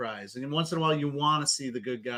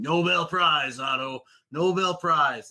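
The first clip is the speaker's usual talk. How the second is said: loud, dragged-out, slow delivery; 4 semitones higher, 6 dB louder than usual. Quoting a cringeworthy movie line in imitation: imitating James Franco. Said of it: "James Franco introducing Otto Octavius to Peter Parker and going".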